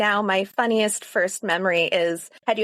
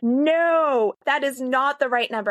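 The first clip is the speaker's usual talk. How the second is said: deliberate, big, slow voice, drawn-out no; 4 semitones higher than usual. Recalling a parent correcting the scoresheet from behind, retelling a big loud voice. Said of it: "this big, loud voice right behind me telling me".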